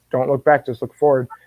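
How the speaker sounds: plain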